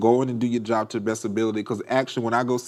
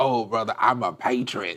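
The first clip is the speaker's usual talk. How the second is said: put-on Southern twang. Retelling how the man in charge mocked a candidate, in a mock southern twang. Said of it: "it's like a southern twang".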